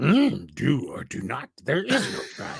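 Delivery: swooping, sage-like wise alien master voice. Asked to give a little Yoda, the speaker does a Yoda voice. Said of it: "Can you give us a little Yoda?".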